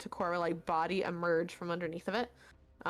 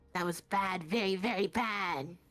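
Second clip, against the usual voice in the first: cackling put-on voice. Describing the voice you would hear when the eye closes, cackling voice. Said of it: "the kind of uh sort of uh cackling voice say".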